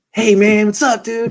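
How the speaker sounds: put-on heavy Southern accent, laid on. Retelling how Reuben Foster talked: imitating Reuben Foster's thick Southern accent. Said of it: "He had such a thick Southern accent".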